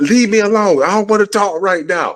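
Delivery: acted, very high, furious angry shouting. Retelling telling off neighbours who came out to look: imitating own angry yelling. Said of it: "I was angry".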